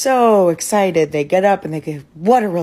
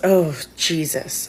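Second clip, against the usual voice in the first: mock muttering under the breath; 4 dB quieter than usual. Retelling a seatmate's reaction when the speaker arrived at their seat; retelling a mutter under breath. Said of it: "under his breath".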